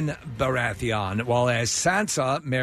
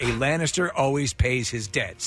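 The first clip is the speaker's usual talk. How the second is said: usual speaking voice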